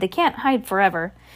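plain

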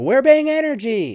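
very loud, very high, hyped-up screaming. Retelling a guy at a booth screaming into a microphone: imitating a guy screaming. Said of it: "a guy just screaming into a microphone".

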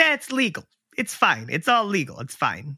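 put-on Italian accent, really leaning in. Retelling the gallery owner's reply to the buyer, in an italian accent. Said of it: "I like how he got real like Italian".

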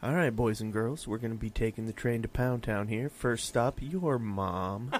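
calm, deep, soft storyteller voice, unhurried. After praise for an earlier voice, doing the deep Santa voice again. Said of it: "The deep Santa voice".

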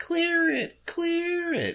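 very high, squealing scream.

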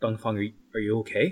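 hushed, whispered. Player voicing Ning approaching Dongfang with fear and trepidation, whispering.

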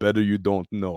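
acted Russian-accented speech. Speaker retelling a man's answer after their boat sank, in a Russian accent. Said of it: "in a Russian accent".

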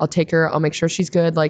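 normal talking voice

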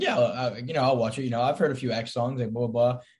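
ordinary talk

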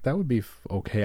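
ordinary talk, nothing marked

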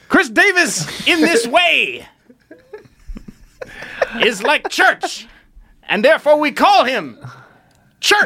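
put-on high, slow preacher-style voice.

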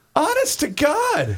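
high, slow, incredulous laughing outburst.

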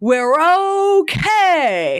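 big booming, high holler with "okay" stretched. Retelling a sitcom hostage scene after the shot, Fran's booming voice. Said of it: "Fran's booming voice going".

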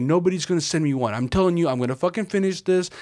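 blubbering, tearful, whiny, insistent crying voice. Retelling what a card-stacking video creator says on camera: imitating someone crying. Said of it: "crying on camera, being like".

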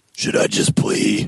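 put-on growling voice. Joking about Batman talking with his lawyers: Batman growl. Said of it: "he growls at them and says".

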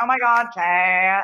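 very slow, drawn-out reality-star cadence. Retelling own reaction to an emotional moment: Kristen Cavallari cadence. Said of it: "Kristen Cavallari sort of, like, Laguna Beach, like, cadence".

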